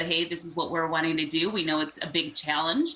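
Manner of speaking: ordinary delivery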